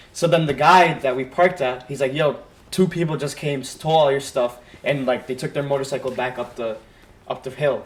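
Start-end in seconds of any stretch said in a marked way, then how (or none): none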